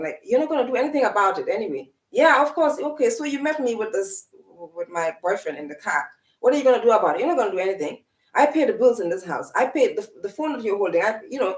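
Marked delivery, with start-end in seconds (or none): none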